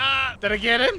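fast, frantic, flustered, panicked voice. Playing a game, unsure whether the attack landed: panicking. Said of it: "I'm panicking".

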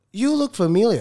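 put-on mainland Chinese accented English. Retelling what a driver said to him: mainland chinese accent. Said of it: "he does this mainland Chinese accent".

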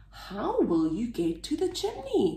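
ordinary delivery

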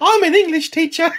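exaggerated put-on English accent, very high, over-the-top. Mocking a teacher character from the show: over-the-top fake English accent. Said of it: "we don't talk like that".

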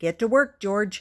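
ordinary talk

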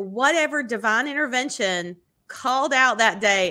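ordinary delivery

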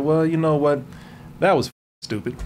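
ordinary delivery

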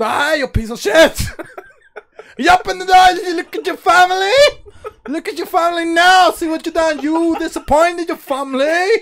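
high cartoon voice. Acting out someone ordering a person to open a door, in a South Park character voice. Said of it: "You sound like a South Park character".

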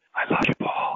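whispered words. Retelling what she whispered to him with her last breath, retelling a whisper. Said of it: "she looked up at me with a smile and whispered".

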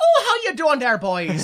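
stock put-on fairy-tale leprechaun character voice. Imagining how the character might greet the boys, in a mock leprechaun voice. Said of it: "like he's a leprechaun or something".

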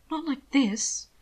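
even, muffled voice. Will, with his knees drawn up, answers Hannibal, steady but muffled. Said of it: "proud of how steady his voice was, even if it was muffled by his knees".

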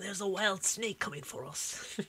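put-on Australian accent. Suggesting a line to say, in an imitated australian accent. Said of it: "You just need the Australian accent, be like".

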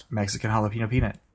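quick-fire, rattled-off delivery at tongue-twister speed. Repeating the phrase after being told to keep saying it fast: said fast. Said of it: "just keep saying it fast".

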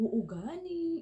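high, slow, drawn-out Ilonggo accent.

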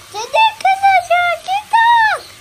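high-pitched thin voice.

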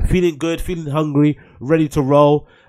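normal talking voice

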